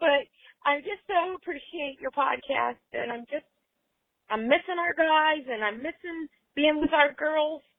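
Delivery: tearful, teary-voiced, speaking through tears. Listener thanking the podcast and missing the group: tearful, in tears. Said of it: "And I'm in tears now".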